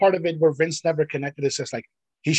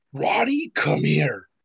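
mock quiet rage, spoken much slower. Recounting someone calling Roddy over; mimicking Keith Lee's quiet rage. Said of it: "you hear this quiet rage".

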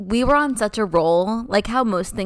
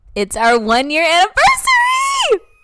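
very screechy, shrill squeal, higher and louder; 11 semitones higher, 5 dB louder than usual. Opening an episode by announcing the one-year anniversary: very screechy. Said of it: "that was very sque-, screechy".

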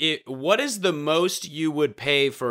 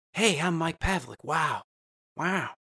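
very slow, drawn-out delivery, wow drawn out; 3 semitones higher, 5 dB quieter than usual. Introducing himself on a recording, doing an Owen Wilson voice. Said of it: "easy to do Owen Wilson".

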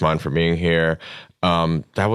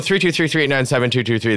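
quickly rattled-off numbers. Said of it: "People sometimes say I say that too fast".

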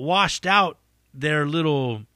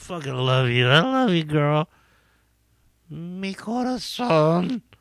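put-on drunk rambling, much slower. Acting out how a drunk man talks, imitating a drunk. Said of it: "as you do when you get drunk".

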